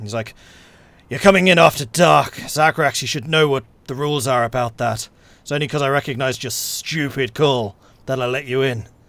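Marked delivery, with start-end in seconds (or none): 1.1-8.8 winded half-orc voice, higher and louder. Voicing a big burly half-orc who just stormed down stairs: half-orc, a little out of breath. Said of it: "A little bit out of breath".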